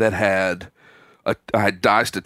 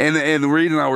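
normal talking voice

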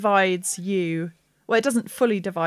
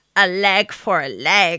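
loud, slow, drawn-out, menacing cackle; 6 dB louder than usual. Narrating a towering creature attacking a player's character, cackling. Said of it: "he cackles".

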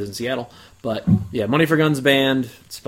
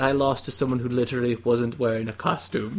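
put-on, very proper British voice, quieter; 6 dB quieter than usual. Retelling what Gavin said after losing the costume contest, imitating Gavin's proper British voice. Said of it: "in his very proper British voice".

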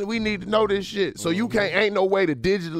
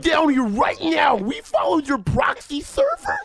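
put-on nerd voice, high and swooping; 9 semitones higher than usual. In a group bit, one speaker threatens another: nerdy voice impression. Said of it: "That is the best nerd impression ever".

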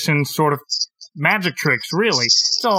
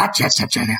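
low, gravelly 1930s entertainer-style voice. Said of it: "It's this guy".

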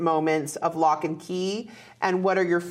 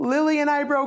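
mock-sobbing, much higher; 9 semitones higher than usual. Recounting what he finally said after behaving difficultly, imitating someone sobbing. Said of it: "just sobbed and said".

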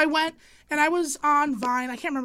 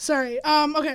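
plain

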